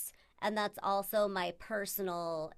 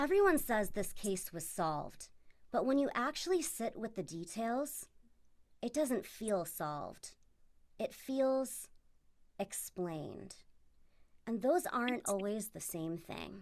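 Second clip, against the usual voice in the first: silky, smooth, velvety tone. Reading a snippet from notes to the others, the speaker uses a velvet voice. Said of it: "velvet voice".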